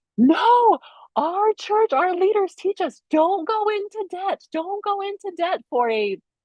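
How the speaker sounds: very high, scared voice. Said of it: "I was scared to death 'cause I was like".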